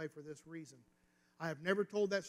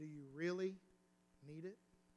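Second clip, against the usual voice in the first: put-on, very calm, quieter tone; 5 dB quieter than usual. Recounting a voice that answered him after he spoke aloud: imitating a very calm voice. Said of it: "in a very calm tone said".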